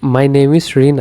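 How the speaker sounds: voice falls in pitch at the end. Teaching an english self-introduction phrase, falling intonation at the end. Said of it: "এখানে আমাদের ভয়েসটি down হচ্ছে।".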